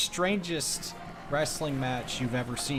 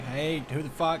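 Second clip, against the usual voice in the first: normal talking voice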